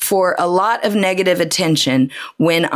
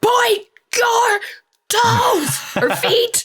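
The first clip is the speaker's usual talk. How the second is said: put-on yelling, higher pitch. Retelling being yelled at by a dance teacher to point feet: imitating the dance teacher yelling. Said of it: "being yelled at to point our feet".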